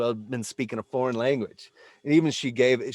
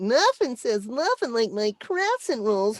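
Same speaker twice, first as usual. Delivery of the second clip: very high, cute, sing-song little character voice; 11 semitones higher than usual. Recalling childhood voice mimicry of a commercial: Pillsbury Doughboy voice. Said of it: "I latched on to Pillsbury Doughboy commercials".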